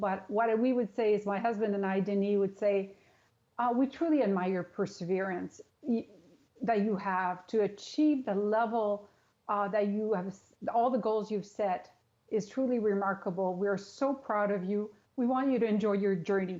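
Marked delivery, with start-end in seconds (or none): 3.8-16.6 slightly choked, voice catching with feeling. A mother, speaking for herself and her husband, to her child leaving for Tokyo: a little emotional. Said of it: "it's a little emotional".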